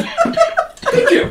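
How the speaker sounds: very high, squeaky little mouse voice. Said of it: "It sounds like a fucking little mouse".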